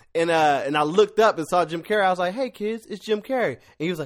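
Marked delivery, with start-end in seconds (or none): 2.4-3.6 calm, soft, easygoing, unruffled delivery. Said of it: "my voice is always real calm".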